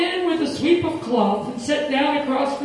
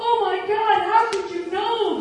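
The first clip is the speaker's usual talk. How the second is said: sudden, high exclaiming outcry; 6 semitones higher than usual. At a psychic show, [name] answers the psychic, crying out. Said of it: "[name] cried".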